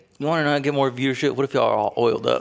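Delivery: put-on creepy older man voice. Retelling an interview, imitating Shaq being creepy. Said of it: "like, a mad unk, you know, like, just, like, kinda creepy".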